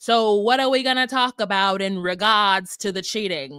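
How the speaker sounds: put-on heavy, thick Boston accent, laid on. Quoting a woman in a conversation, with a thick Boston accent. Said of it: "She's got that thick Boston accent and she's just like".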